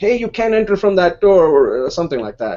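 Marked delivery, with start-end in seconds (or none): 0.0-1.5 put-on male screaming, high and loud. Retelling a guy at the grocery store entrance: imitating someone screaming. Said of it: "this guy is, like, screaming at me".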